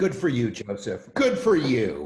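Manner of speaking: sarcastic, mocking praise, loud and swooping. Responding to someone who will stick with no water: sarcastic. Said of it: "that sounded sarcastic or something".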